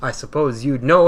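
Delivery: ordinary delivery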